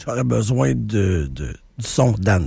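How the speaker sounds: very deep, drawn-out voice, polite tone.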